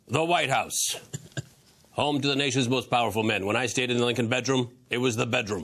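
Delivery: loud, projected talk-show host announcer delivery. Asked to try again after a first attempt: Larry King impression. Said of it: "my first ever Larry King impression".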